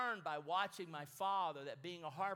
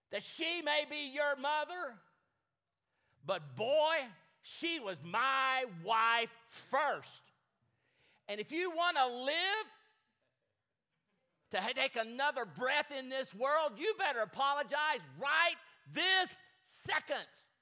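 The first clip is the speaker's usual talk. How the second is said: mock fearsome, loud, raised, terrifying voice; 8 semitones higher, 7 dB louder than usual. Retelling what a father told his son about the boy's mother, acting out a terrifying voice. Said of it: "the most terrifying voice".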